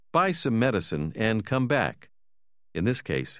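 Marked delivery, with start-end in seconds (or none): none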